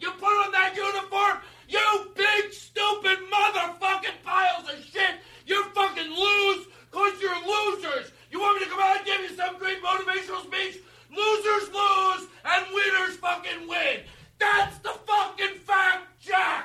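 very high-pitched, enraged, furious screaming rant. Acting a scene where a coach snaps in a nervous breakdown: acted furious screaming rant. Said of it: "I have a nervous breakdown".

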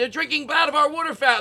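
very high, frantic, hysterical alarm.

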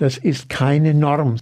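keine stressed and said slowly. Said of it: "betone aber bitte".

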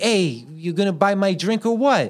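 mock Bronx accent, woman's voice.

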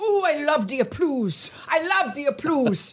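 put-on French accent, pitched high. Imitating a French guest's broken English on a talk show: Genevieve's fractured French-accented English. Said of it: "she would have fractured Fren-, English".

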